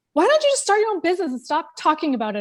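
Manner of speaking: stern voice, high pitch, fast pace.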